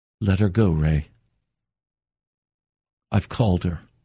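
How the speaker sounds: very low, deep voice, said simply. A man recalls what the Lord said to him, retelling very quiet words. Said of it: "The Lord just very quietly said to me".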